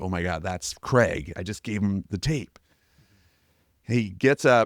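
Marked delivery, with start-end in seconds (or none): 0.0-2.6 play-acted panicked, excited, frantic freak-out. Retelling sitting with dad after handing over the tape: imitating own freak-out. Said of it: "freaking out".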